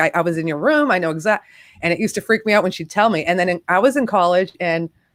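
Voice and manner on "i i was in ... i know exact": ordinary talk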